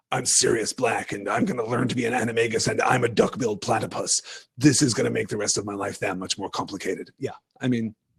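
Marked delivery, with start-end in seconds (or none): 0.1-7.1 deep, brooding masked-hero voice, low. Speaker acting out a character's thoughts, in Batman voice. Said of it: "I don't know why I was doing Batman voice".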